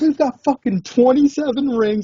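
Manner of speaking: mock, very high, frantic, worked-up outburst. Retelling a Yankees fan confronting their dad: imitating someone freaking out. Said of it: "the guy just fucking started freaking out".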